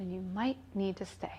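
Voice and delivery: acted affectionate voice. Retelling her intuition's suggestion to stay: imitating a loving voice. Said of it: "she just made a loving suggestion".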